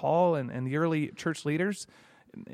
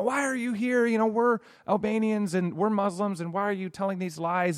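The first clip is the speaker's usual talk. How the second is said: mock agitated, heated, accusing outcry; 5 semitones higher than usual. Retelling an incident, the speaker is retelling a yell from one man at another. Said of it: "he starts yelling at him".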